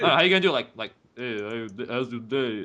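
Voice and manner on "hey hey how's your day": put-on mumbling tough guy voice. Showing how hard everyday talk sounds as Stallone: Sylvester Stallone voice. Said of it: "in a Sylvester Stallone voice".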